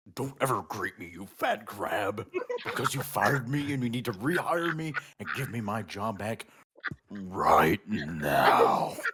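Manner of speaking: deep, dark, demonic wolf-like voice. Reading a story where a fired character confronts his old boss, deep demonic wolf-like voice. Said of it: "said in a wolf-like, deep, dark, and demonic voice".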